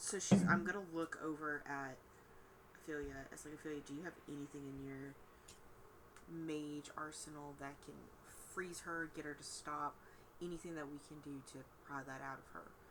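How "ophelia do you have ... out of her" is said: hushed half-whispered voice, under the breath. Asking a party member for a spell to stop someone: half-whispering. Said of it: "I'm whispering".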